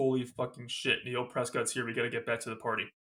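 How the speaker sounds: ordinary delivery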